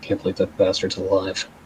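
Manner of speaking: very quiet, low mutter under the breath. Voicing a character during a conversation: muttered under her breath. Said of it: "Cirrus will mutter something u-, under her breath".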